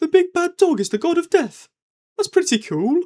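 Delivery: put-on Brummie Birmingham accent, pitched very high. Retelling what his wife said after the episode: imitating a Birmingham accent. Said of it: "in her lovely Birmingham accent".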